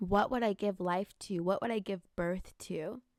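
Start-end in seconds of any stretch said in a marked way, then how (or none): none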